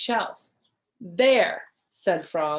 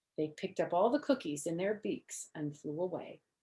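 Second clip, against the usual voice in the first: ordinary delivery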